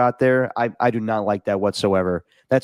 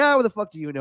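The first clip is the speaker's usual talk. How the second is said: angry, pissed-off voice, pitched up; 9 semitones higher than usual. Retelling the speaker's dad snapping at a guy in a bar: imitating an angry dad. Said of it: "My dad was so pissed".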